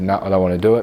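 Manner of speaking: ordinary talk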